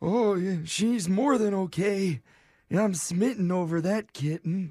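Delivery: put-on high old man voice. Prank calling a grandson in character: Alan Winterbottom old man voice. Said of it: "I love your old man voice so much".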